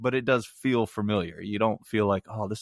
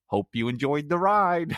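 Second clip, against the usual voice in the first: robot chauffeur voice with raised pitch; 6 semitones higher than usual. Wishing an electric car talked like the movie cab, the speaker does Johnny Cab voice. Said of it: "give me some Johnny Cab".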